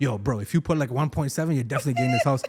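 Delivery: casual street-slang delivery.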